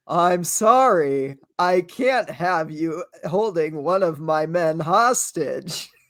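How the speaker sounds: stiff, machine-like put-on robotic voice. Describing a movie's weird line delivery, quoting the main character in a robotic voice. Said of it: "talks like in a robotic voice".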